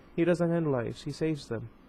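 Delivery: ordinary delivery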